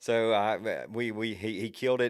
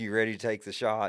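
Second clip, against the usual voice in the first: acted-out whisper. Retelling asking a young hunter if he's ready to shoot: retelling a whisper. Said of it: "I'm whispering to him".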